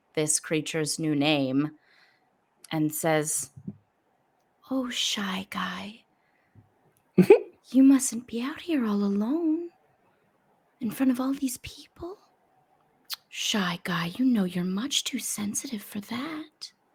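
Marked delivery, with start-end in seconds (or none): 4.7-16.7 soft whisper, higher. A role-player speaks as her character to a creature, whisper. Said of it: "so she just whispers".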